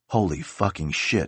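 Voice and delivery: muttered under the breath. Turning back toward the pad, a man keeps saying this to himself. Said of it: "he kept saying to himself".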